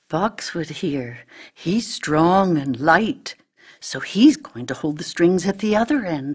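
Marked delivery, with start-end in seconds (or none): none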